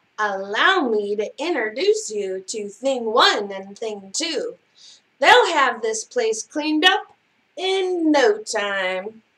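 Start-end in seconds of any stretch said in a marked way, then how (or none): none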